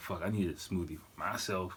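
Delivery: plain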